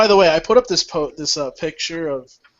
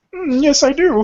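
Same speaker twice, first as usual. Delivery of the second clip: very high-pitched frog puppet voice; 10 semitones higher than usual. Asked whether you need water to be an amphibian, answer in a Kermit the Frog voice. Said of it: "talk like ... Kermit the Frog".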